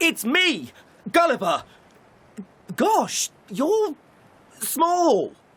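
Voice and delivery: shouting. Greeting the people who rescued him from the sea: shouting. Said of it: "And why are you shouting?".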